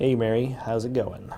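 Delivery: normal talking voice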